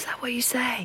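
soft, unvoiced whisper.

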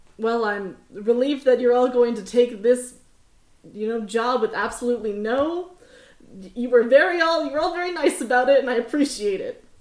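sarcastic tone. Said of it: "This is me being sarcastic".

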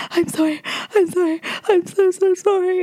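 high-pitched, sobbing, tearful bawling. Recounting holding him after nearly letting him fall, acting out own bawling apology. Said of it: "and just absolutely bawled".

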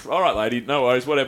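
ordinary talk

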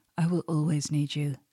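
ordinary delivery

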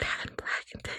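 hushed whisper. Quoting how people have described the speaker, whispering. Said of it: "why are you whispering?".

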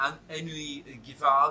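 high-pitched mock French accent.

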